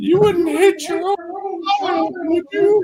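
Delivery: put-on tiny, very high baby creature voice. Holding up a dead baby creature and speaking to its mother: speaking as the dead baby creature. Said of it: "speaks to its mom through its voice".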